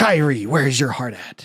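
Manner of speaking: put-on anime boy voice. Acting out a Kingdom Hearts moment: Sora voice. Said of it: "It actually sounded like the voice actor".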